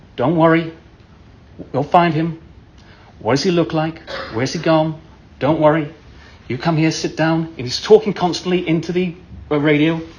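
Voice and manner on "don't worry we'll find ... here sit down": composed, calm, deep American voice. Retelling how a park ranger reassured the worried parents: imitating a calm deep-voiced American ranger. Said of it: "speaking in that way that only a certain type of American can speak. Calmly, with deep voice".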